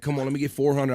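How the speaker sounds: ordinary talk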